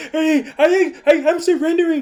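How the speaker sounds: high, loud, whiny, pleading voice. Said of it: "And he's like".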